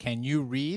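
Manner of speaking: ordinary talk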